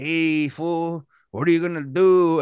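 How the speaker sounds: put-on Mexican accent in English. Speaker retells two podcast hosts' bit, in a mexican accent impression. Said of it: "did like a Mexican impression".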